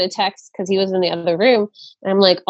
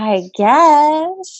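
put-on soft-spoken man's voice, higher; 7 semitones higher than usual. Retelling a husband's hesitant reply to his wife's request: imitating a soft-spoken man. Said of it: "this really soft-spoken dude".

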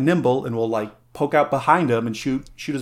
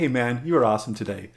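acted close whisper; 3 dB quieter than usual. Acting out a little guy whispering into someone's ear: acted whisper into someone's ear. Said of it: "whispering into his ear".

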